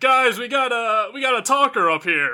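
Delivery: mock shouted, high-pitched yell. Shouting back to the party from the pit: yelling to the party. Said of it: "I yell back".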